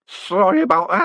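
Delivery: put-on high, slurring drunken voice. After a drunk man smashes his glass on the carpet: drunken slur. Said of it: "he slurred".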